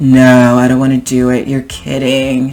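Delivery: put-on bored sarcastic teenager tone. Speaker demonstrates how a teenager would say it, sarcastic eye-rolling teenager. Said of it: "like a teenager would say it. They're just eye roll".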